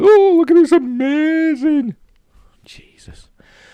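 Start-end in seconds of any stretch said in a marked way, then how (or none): 0.0-1.9 very high, loud, drawn-out sarcastic gushing freak-out. Mocking reactions to a short set video: imitating people freaking out. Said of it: "there'll be people freaking out over that".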